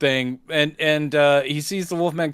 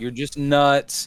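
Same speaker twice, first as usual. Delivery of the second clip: put-on condescending voice. Imitating the film's doctor talking to a patient: imitating a condescending doctor. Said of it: "he is crazily condescending".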